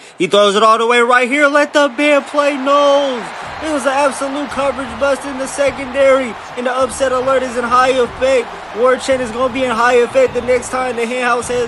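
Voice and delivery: excited, high-pitched, shouted hype delivery.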